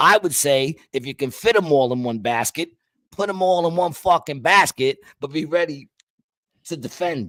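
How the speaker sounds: worked-up, excited, carried-away rant. Arguing about carrying eggs in baskets, yelling. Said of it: "quit yelling at me".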